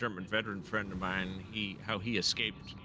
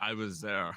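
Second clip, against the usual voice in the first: put-on heavy German accent, laid on thick. Retelling what an older man said at a D-Day reenactment: thick German accent. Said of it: "In his thick German accent".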